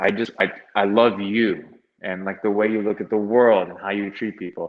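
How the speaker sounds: put-on heavy, weighty pleading tone. Quoting her request during a talk about wrestling, retelling a heavy plea. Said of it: "the way she said it, it was like so heavy".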